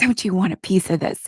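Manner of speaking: imitated talking with a hacking cough. Retelling a sick character's flirty line, imitating talking with a hacking cough. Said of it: "talking with, like, a hacking cough".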